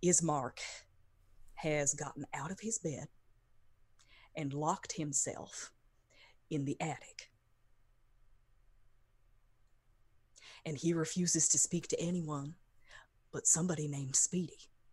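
confiding stage half-whisper. Voicing a character telling a player about Ismark: half-whispering in character. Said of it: "he just kinda whispers to you".

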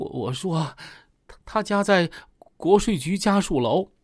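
weak, feeble voice with halting, stumbling, broken-up words. A suspect whose resolve has collapsed answers the interrogators: weak, feeble voice. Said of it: "有气无力的说".

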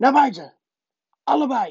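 high, croaked-out voice. Reading a story aloud, the uncle orders both boys out, croaked. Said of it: "kraste oom Herman".

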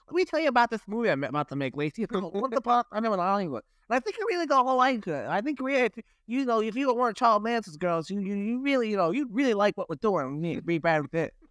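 rattled off quickly in a rush. Joking that an actor looks like the director, doing a Quentin Tarantino impression. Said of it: "Is that a good Tarantino impression?".

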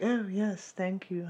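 slow, offhand, dismissive British manner. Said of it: "in that really dismissive British way".

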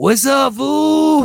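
high, loud put-on voice, "fool" drawn out. Acting out walking in to greet the cook friends: put-on Chicano slang voice. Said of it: "I only talk like that the whole time".

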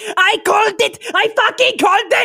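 put-on excited shout. Predicting how she will react, grabbing Minive by the shoulders: acting out Kyra's excited yell. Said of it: "shakes her like".

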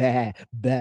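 normal talking voice

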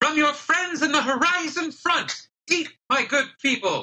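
very high, loud shouting. Voicing a young man on a food wagon calling to the crowd: yelling to a crowd. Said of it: "yells out to the crowd".

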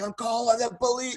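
play-acted angry screaming, shrill, pitched way up. Retelling how an angry man in the elevator yelled: imitating someone screaming. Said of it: "screaming at me on".

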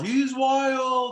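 very high, shrill, booming, stretched-out heckling holler. Retelling what one of the guys yelled at the other pitcher: imitating a fan yelling. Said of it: "you could hear him yell".

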